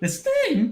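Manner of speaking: mock voice cracking, imitated. Imitating the other speaker's voice crack: imitating a voice crack. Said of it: "did you not notice your voice crack there?".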